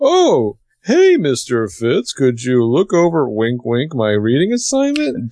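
silly, goofy put-on voice. Describing a student with her back to the class, addressing her teacher: imitating a goofy cover voice. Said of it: "goofy cover voice".

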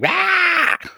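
high, shrieking battle yell. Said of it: "be like".

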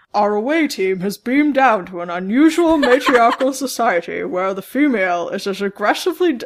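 thick, mushy speech, as if mouth full of marbles. Reading a captain's log aloud: sounding like Sean Connery. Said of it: "I sound like Sean Connery".

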